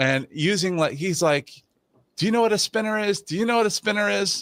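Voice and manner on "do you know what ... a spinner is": high-pitched, angry, badgering, berating rant. Retelling how a loud guy on a call berated another guy: imitating a loud guy berating someone. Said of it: "starts berating some other guy".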